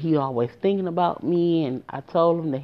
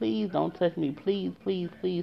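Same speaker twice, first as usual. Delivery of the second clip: put-on crying, quieter; 7 dB quieter than usual. Speaker retells begging a man not to touch them, retelling a crying plea. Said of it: "I'm crying because he's steady trying to touch me".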